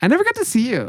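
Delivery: very high-pitched, odd, weird cutesy voice. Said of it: "she would do this high-pitched weird thing".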